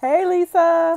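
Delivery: put-on very high, loud, slow, sassy kid voice.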